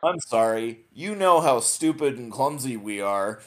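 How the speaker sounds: extremely snarky voice. Retelling a scene from the show: snarky Dargo line. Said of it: "as snarky as Dargo's ever gonna get".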